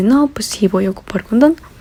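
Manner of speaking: plain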